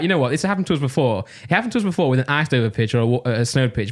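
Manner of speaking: ordinary talk, nothing marked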